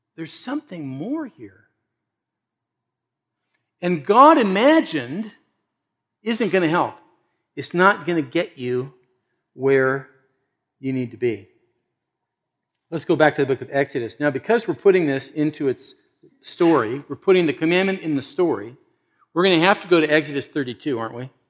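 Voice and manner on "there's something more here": soft, pleading tone. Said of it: "He's pleading and saying".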